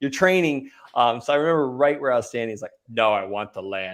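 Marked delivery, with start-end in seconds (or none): 2.9-3.9 super tough, slow Texan drawl. Retelling a man's reply while taking offers, in his super tough Texan voice. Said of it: "like in his like super tough Texan voice".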